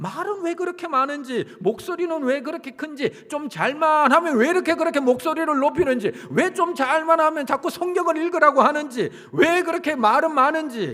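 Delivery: high, loud, irritated grumbling.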